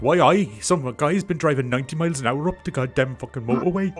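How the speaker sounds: put-on high, loud ranting in a broad Geordie accent. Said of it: "a Geordie lad being like".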